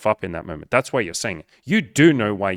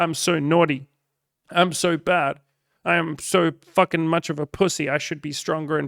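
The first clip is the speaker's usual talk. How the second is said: delighted, indulgent moans; 6 semitones higher than usual. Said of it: "such a thrill to just be like".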